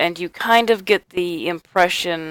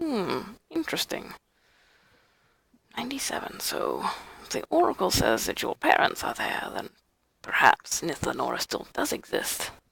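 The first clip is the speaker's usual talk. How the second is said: put-on crotchety, grumpy old man voice, much quieter; 9 dB quieter than usual. Narrator voices an old character replying to the listener, crotchety old man voice. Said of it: "When I'm speaking as crotchety old man?".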